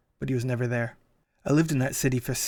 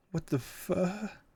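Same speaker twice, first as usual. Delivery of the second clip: frightened, high, soft whimpered words; 6 semitones higher, 7 dB quieter than usual. Reading a story aloud, the narrator's blurted words come out whimpering. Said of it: "What came out was a whimper".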